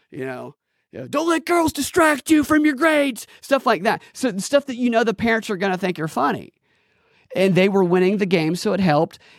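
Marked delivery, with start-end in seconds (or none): 1.0-3.2 put-on high-pitched, shrill, aggressive heckling shout. Retelling heckling a college baseball team from the stands: imitating an aggressive heckle shout. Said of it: "like that aggressive heckle tone".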